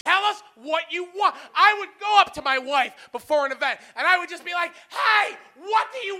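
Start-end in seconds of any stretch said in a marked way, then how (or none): 4.9-6.2 put-on rude tone, pitched up. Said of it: "not in that tone".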